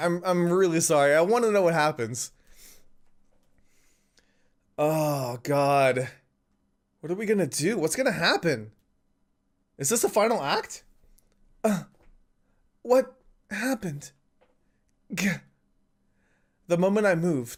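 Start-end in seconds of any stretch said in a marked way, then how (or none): 1.1-14.1 losing their voice, voice giving out. Carrying on reading after apologising for their voice, voice giving out. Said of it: "my voice is like going out on me".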